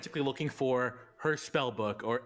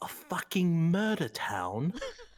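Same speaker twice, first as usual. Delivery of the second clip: hushed whisper; 5 semitones higher than usual. A player's character explains to Nyx why he must go, whispered. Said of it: "and he whispers".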